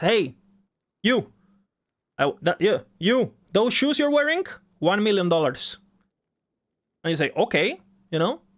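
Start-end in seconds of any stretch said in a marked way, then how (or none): 0.0-5.8 put-on mafia gangster voice. Telling a hypothetical, a speaker acts out a mafioso on the street, imitating a mafia gangster. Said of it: "fucking mafioso walks to you and says".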